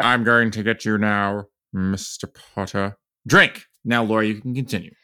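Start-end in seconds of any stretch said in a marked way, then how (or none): 0.0-3.0 slow, drawn-out delivery with every word stretched. Showing the others how Snape's line should sound: Alan Rickman impression. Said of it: "doing the Alan Rickman impression".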